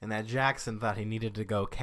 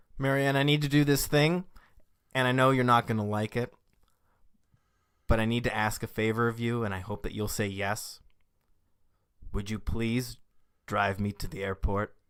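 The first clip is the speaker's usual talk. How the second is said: plain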